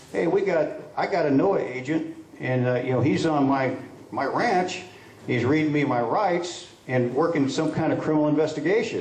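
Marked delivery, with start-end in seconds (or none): none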